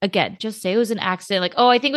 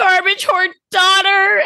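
fake sobbing, higher and louder; 10 semitones higher, 6 dB louder than usual. Showing a TikTok trend of saying a phrase in emoji tones: mock crying. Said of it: "cry face".

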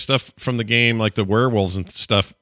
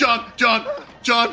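terrified calling out, higher pitch; 12 semitones higher than usual. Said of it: "real terror in my voice".

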